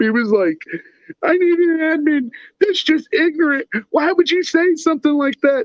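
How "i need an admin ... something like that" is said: mock crying, higher. Retelling how a group member complained about posts: imitating someone crying. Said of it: "crying on this group".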